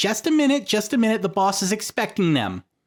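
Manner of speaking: very high, squeaky, swooping little imp voice. Narrating a game scene, a voice stops the players at the gate: little imp voice. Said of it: "you see a little imp".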